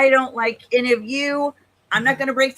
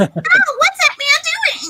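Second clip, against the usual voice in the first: squeaky, very high, sing-song little-girl cartoon voice; 4 dB louder than usual. Mocking voice actors who played small little girls: imitating a voice actor playing a little girl. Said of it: "small, little girl children who was like".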